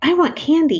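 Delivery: really excited and eager. Teacher models a sentence with an exclamation mark for students, excited. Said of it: "I'm saying it like I'm really excited".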